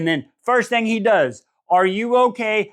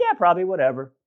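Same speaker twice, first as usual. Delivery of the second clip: careless, offhand, nonchalant couldn't-care-less tone; 2 semitones lower than usual. Retelling a character's reply about the melted wax: imitating Ray Ray's nonchalant reply. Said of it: "so nonchalant".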